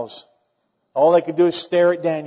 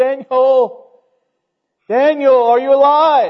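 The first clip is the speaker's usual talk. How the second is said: mock mournful call, very high, very loud, drawn out; 10 semitones higher, 9 dB louder than usual. Acting out a call to someone thrown among the lions: mock-lamenting call. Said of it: "Can you imagine that lamentable voice?".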